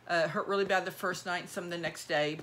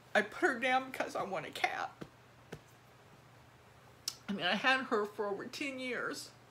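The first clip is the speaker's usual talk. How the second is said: tearful, breaking voice, speaking through tears; 4 semitones higher, 4 dB quieter than usual. Speaking to video viewers about having her put down, getting emotional, near tears. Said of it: "sorry for getting so emotional".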